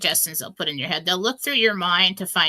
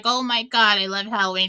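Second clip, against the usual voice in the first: put-on, excited, gushing voice. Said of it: "She's like".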